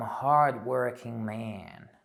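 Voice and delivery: loud, slow, drawn-out fake American accent. A speaker talking about being told to work hard: put-on American accent. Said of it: "That was my American accent".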